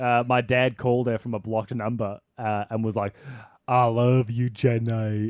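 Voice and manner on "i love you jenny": very slow, word-by-word, drawn-out delivery. Retelling a call where dad opened with a Forrest Gump impression. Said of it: "is a Forrest Gump impression".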